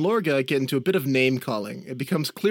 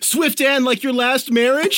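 very high, shrill, loud heckling jeer; 10 semitones higher, 6 dB louder than usual. Voicing a student heckling in front of the magistrate, a heckling taunt. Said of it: "The student group will start heckling them".

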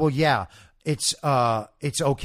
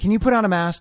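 loud, high-pitched, patronizing, talking-down tone; 9 semitones higher, 5 dB louder than usual. Retelling a coffee shop worker asking for a mask: imitating a condescending request. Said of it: "said in a condescending fashion".

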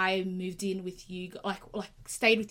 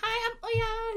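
put-on high, shy, timid little-kid voice. Retelling a first meeting as a child: imitating shy little kid. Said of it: "I remember being a shy little kid".

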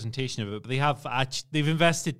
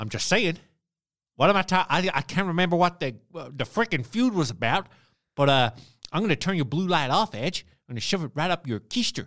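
put-on Southern accent voice, higher; 4 semitones higher than usual. Doing an AJ Styles voice after being asked: AJ Styles impression. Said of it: "I've got the wrong Southern accent".

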